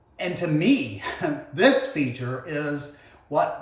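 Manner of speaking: thrilled, animated shouting with swooping pitch. Telling viewers about a feature for a separate video: excited yelling. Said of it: "I apologize for yelling there, I'm so excited".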